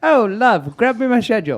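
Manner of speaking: fake, bad English accent, very high and loud. Retelling a request to his wife in a bad English accent. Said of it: "No, that's horrible".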